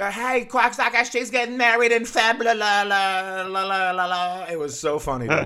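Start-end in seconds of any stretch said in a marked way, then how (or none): 0.1-4.4 put-on thick drunk Boston accent, higher pitch. Retelling what a drunk audience member said: imitating a thick boston accent. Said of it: "thick Boston accent".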